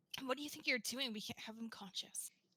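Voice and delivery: soft, low half-whisper under the breath. A character grabs onto a companion with Gundyr right there, half-whispering. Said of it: "I grab onto you and I whisper".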